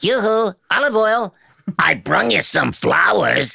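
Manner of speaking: very high, scratchy, swooping cartoon sailor voice. Showing others Popeye's signature two-voice sound, the speaker does a Popeye voice.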